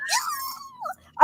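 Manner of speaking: yeah said in a very high pitch. Imitating Teresa from New Jersey: Teresa high-pitched impression. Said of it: "she does that high-pitched thing where she's like".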